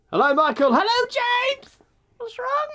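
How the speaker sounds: very high, squeezed, tightened, strained voice. Greeting Michael and James, tight, strained voice. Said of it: "I'm suddenly so tight and tightened".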